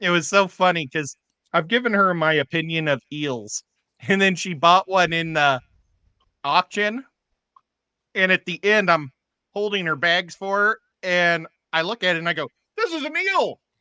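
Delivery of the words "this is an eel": very high, shocked, alarmed, startled outburst. Retelling looking into a friend's auction bag: retelling own shocked, alarmed exclamation. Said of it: "I sounded so shocked and alarmed".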